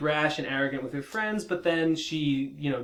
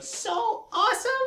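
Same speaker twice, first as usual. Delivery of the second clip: very high, thrilled, excited cartoon voice, squeezed out. Quoting a cartoon pony's excited line: Rainbow Dash voice. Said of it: "That's my Rainbow Dash voice".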